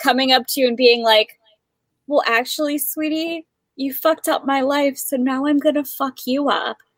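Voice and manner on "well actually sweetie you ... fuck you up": put-on gentle, sweet, soft granny voice, menacing and threatening. Imagining a soft grandma who taught you to read threatening you: imitating a soft grandma threatening. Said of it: "soft albino grandma who just taught you how to read".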